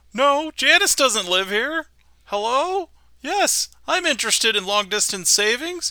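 put-on high squeaky teenage voice. Describing a public access TV scene, imitating the Squeaky-Voiced Teen. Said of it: "the pimply face teen that's working in the".

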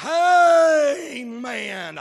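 very loud, jubilant "amen" stretched out long. Showing how amen is supposed to be said: drawn-out amen. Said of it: "It's supposed to be said with elongated pronunciation".

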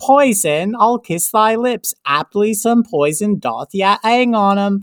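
put-on hammy, over-the-top Cockney accent. Mocking a badly acted Shakespeare scene, in a Cockney accent. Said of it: "she has like a Cockney accent".

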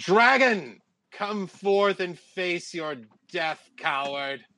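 booming, amplified, carrying, high-pitched call. Player's character marches into the wasteland and calls out to a dragon, booming voice. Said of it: "use thaumaturgy to make my voice boom out".

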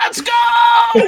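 very high, loud hype scream, drawn-out go. Imagining Tyler1 showing up and playing five Dravens: mock Tyler1 scream. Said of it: "he's just screaming".

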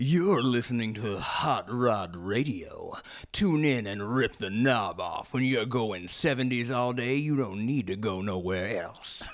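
put-on sexy 1970s radio host DJ voice. Asked for a sexy 70s radio host, doing a station announcement: sexy 70s radio host voice. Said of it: "It sounds like really like sexy 70s radio host".

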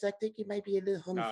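thin, put-on voice. Arguing over how Tyson said it, quoting him: Tyson thin-voice impression. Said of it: "Tyson got that thin".

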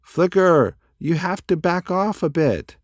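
shouting loudly, high-pitched yell over noise. Dash calls to Flicker over the noise of his flapping wings, yelling. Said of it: "yelled Dash over the noise of his wings".

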